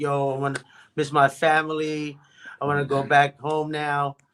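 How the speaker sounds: mock tearful, kind of crying, half-crying voice. Retelling going to friends while homesick: imitating own past crying. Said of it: "kinda crying".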